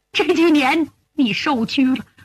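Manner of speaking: ordinary talk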